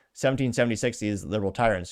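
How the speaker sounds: usual speaking voice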